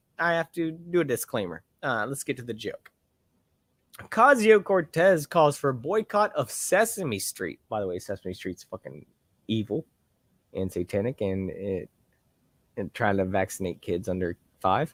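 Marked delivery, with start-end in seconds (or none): 8.0-15.0 very low, deep voice, dropped register. Speaker reading a satirical article aloud, adding an aside in a low voice. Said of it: "what I said in my low voice".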